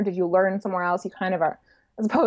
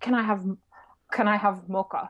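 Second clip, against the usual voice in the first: poor imitation of Russian accent; 3 dB quieter than usual. Quoting a foreign customer ordering a mocha: bad Russian accent. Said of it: "That's not a good Russian accent".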